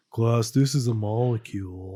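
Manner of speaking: flat, low, slow, droning monotone. Imitating a chemistry teacher teaching class: imitating a monotone teacher. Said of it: "when you speak like Ben Stein".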